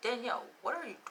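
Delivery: whispering, self-scolding.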